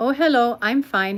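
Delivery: put-on Indian accent. Retelling a caller's reply after he stopped his spiel, in an Indian accent. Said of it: "He had his Indian accent".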